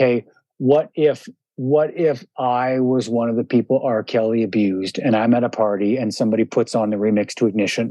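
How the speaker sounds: ordinary talk, nothing marked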